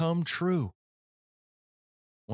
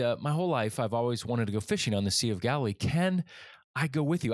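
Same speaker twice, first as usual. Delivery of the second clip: ordinary delivery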